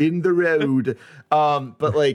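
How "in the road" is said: put-on tour guide accent, higher pitch. Imitating the tour guides on the liverpool trip: imitating a tour guide's accent. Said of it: "sorry about the accent".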